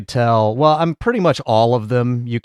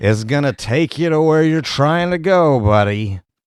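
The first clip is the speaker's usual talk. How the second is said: mock drunken voice, pitched higher; 3 semitones higher than usual. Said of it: "This motherfucker hammered trying to sell you wine".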